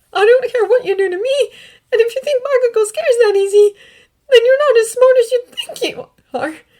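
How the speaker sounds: trembling voice. Reading a captive's defiant reply to the villain: shaking voice. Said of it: "letting his voice shake like it wants to".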